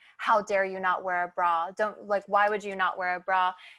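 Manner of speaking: put-on scolding tone in a hushed whisper. Speaker retells her pastor coming up at a soccer game, mock scolding whisper. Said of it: "just whispering like".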